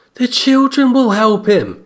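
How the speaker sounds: put-on high, sudden, blurted boy's outburst.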